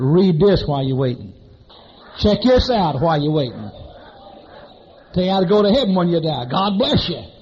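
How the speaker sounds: coarse, rough voice calling out. Retelling a voice heard from the stalls, imitating Carl Hatt's rough voice. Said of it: "I hear this rough voice".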